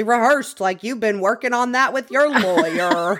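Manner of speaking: rough talk-show host voice. Retelling what Doctor Phil said to a guest: Doctor Phil impression. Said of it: "That was an amazing Doctor Phil impression".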